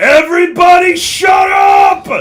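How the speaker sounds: very loud, booming, high orc bellow. Game master voices the orc Burl Ka addressing the crowd, in a booming voice. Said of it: "you hear a booming voice".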